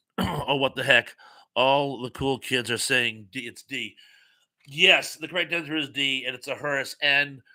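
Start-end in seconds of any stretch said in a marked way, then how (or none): none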